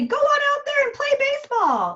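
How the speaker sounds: very high, bright, upbeat, bouncy voice. Explaining attunement, the speaker shows an unhelpful way to address a shy child, bright affect. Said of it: "use a bright affect and say".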